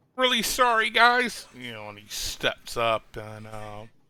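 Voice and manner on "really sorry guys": very high video-game hero voice. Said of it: "She sounds like Tracer".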